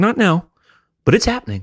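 unbothered, matter-of-fact menace. Retelling a bully's threat in a school bathroom: imitating a calm threat. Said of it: "He was just calmly".

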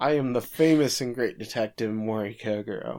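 normal talking voice

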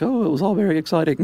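put-on very high-pitched British old lady voice. Retelling what the interviewed lady said, older british lady accent. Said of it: "That's a great British lady accent".

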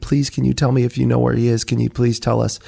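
put-on tearful, pleading, crying voice. Recalling begging a longtime babysitter as a seventh grader, retelling a crying plea. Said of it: "I'm crying".

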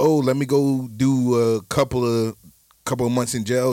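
ordinary delivery

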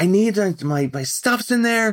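put-on shrill, very high, upset yelling. Retelling a woman at the baggage counter over a lost bag, imitating someone yelling. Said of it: "She's like yelling at the woman".

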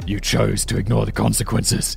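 gruff, rough, creaky growl. Reading the Killer's dialogue from a script, in a Batman voice. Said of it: "I tried to do with a Batman voice there".

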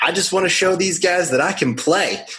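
put-on heavy Southern accent, pitched high. Speaker quotes a guy on the phone: thick Southern accent. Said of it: "like a thick Southern accent".

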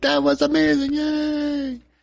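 very high, excited, gushing cheering voice.

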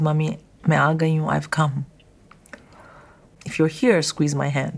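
put-on whispering voice. Retelling words said to her mother in hospital: retelling a whisper. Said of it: "I whispered in her ear".

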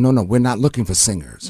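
ordinary talk

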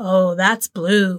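voice full of reverence. Quoting a favorite movie scene about the pledges' pictures, Beanie's reverent tone. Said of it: "the reverence in Beanie's voice when he goes".

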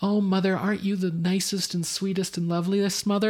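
put-on sweet little-girl voice. Acting out a character's cute little girl routine: imitating a cute little girl routine. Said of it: "cute little girl routines".

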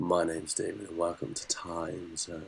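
silky smooth tone. Taking up a request for a Mr. Smooth voice, the speaker does a smooth voice. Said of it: "let's do a smooth voice".

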